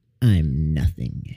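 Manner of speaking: very deep, dropped voice. Reading a story aloud, voicing her reply to the terrified god in a very deep voice. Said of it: "so now her voice is really deep".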